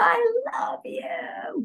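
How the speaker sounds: raspy voice, calling out. Retelling a voice that yelled out to the speaker: imitating Joan Rivers' raspy yell. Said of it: "yell out, ... in a raspy voice".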